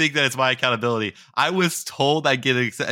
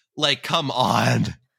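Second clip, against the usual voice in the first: usual speaking voice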